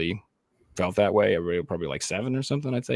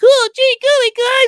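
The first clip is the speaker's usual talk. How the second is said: put-on very high, loud, shrill prepubescent boy voice; 11 dB louder than usual. Mocking a woman trying to voice a boy, prepubescent boy voice. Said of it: "sounds like a prepubescent boy being like".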